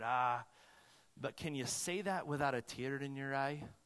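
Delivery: put-on soft, calm voice with Scottish accent. Retelling a reply given at a debate about hell: calm Scottish voice as Alistair Begg. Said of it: "came in with this calm Scottish voice".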